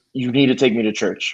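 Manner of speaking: put-on deadpan, dead serious delivery. Retelling what a friend said after a movie: imitating a dead serious face. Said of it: "she looked at me dead serious face".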